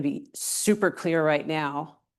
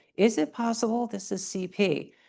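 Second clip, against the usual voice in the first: careful, hesitant, slow, high-pitched tentative tone; 6 semitones higher than usual. Retelling a question put to a surgeon: very quiet voice. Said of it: "very quietly".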